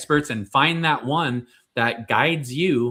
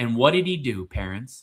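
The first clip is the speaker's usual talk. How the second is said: normal talking voice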